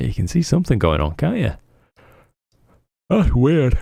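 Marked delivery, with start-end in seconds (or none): 3.1-3.8 yawny speech, spoken mid-yawn. Looking at telescope images as people react, talk while yawning. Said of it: "ever so sorry for yawning".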